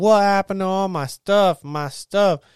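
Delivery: play-acted, full-on high-pitched screaming. Retelling how the house owner found her stuff gone, imitating her screaming. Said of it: "she just started screaming".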